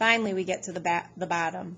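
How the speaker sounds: ordinary delivery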